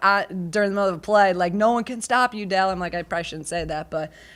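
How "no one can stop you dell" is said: encouraging call, screamed. Retelling what was shouted at players during a play: imitating own screaming. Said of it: "I'm screaming at them".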